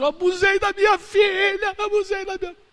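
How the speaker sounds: very high, weeping, sobbing cry. The speaker retells a man who cried out a confession in public; imitating someone crying. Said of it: "Ele chorava e dizia assim".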